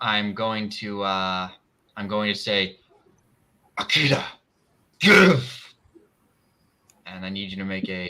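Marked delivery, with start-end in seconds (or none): 3.8-5.7 loud, shockingly dark, hostile delivery. Casting a spell on another character in the game: shockingly dark and hostile voice. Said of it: "in a voice that sounds shockingly dark and hostile".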